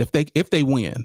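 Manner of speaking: ordinary talk, nothing marked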